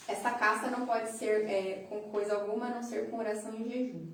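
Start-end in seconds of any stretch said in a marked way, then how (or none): none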